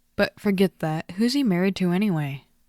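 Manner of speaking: plain reading voice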